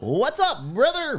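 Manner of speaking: very high-pitched delivery.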